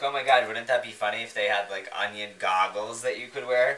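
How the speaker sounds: ordinary talk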